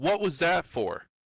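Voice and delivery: sudden startled scream, high and shrill. A street girl NPC jumps off Matthew and turns on a player, screaming. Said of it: "looks at you and screams".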